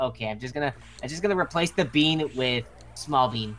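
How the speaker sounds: ordinary talk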